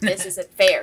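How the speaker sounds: loud, put-upon, protesting complaint. Retelling how dad complained when the kids all targeted him. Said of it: "he's like".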